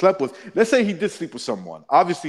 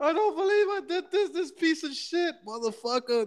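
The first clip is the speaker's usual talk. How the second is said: mock weepy crying, very high and hushed; 5 dB quieter than usual. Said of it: "and she starts crying".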